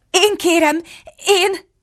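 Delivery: hesitant, faltering, unsure and halting speech. Alice answers the pigeon, who says she wants to lie: hesitant. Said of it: "mondta Alice tétován".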